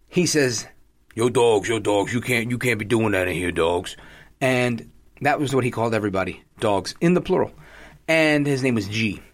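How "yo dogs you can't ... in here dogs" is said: put-on New York gangster voice, much lower, slower. Recalling what the man at the barbershop told him: imitating G. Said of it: "he was like a gangster from New York".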